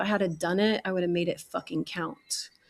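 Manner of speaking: wound-up, neurotic, intense delivery. Retelling leaning toward a detective, imitating own neurotic manner. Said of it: "very neurotically, I leaned forward".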